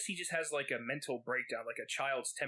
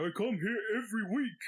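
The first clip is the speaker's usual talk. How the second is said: put-on loud, high, berating, poor British accent; 8 semitones higher, 5 dB louder than usual. Imitating a British guy berating the owner; bad British accent. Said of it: "I can't do a British accent worth a shit".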